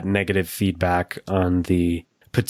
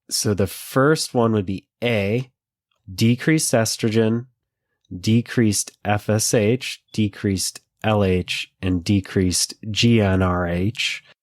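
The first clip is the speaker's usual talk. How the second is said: careful, slow, deliberate, spaced-out reading. Reading complicated multiple-choice answer options aloud: reading slowly. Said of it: "I'm gonna read 'em slow".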